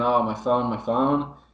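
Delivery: ordinary delivery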